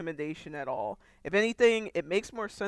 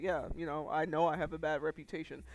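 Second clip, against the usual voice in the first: mock nonchalant, dismissive tone, quieter; 3 semitones lower, 5 dB quieter than usual. Retelling how a character brushes off blame: imitating a dismissive shrug-off. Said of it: "he just kinda, like, shrugs you off".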